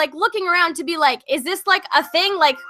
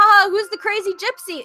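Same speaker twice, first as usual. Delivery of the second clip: acted-out sneering laugh and mocking taunt; 3 semitones higher than usual.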